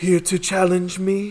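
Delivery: tearful crying swordsman character voice. Narrator voices a weeping lone swordsman addressing the players: tearful swordsman voice. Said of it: "wipes his tears".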